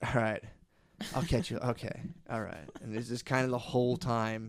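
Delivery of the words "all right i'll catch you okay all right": offhand, passively cool, overly familiar buddy-like tone. Imitating an overly confident waiter taking an order: imitating a passively cool waiter. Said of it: "passively cool dudes you".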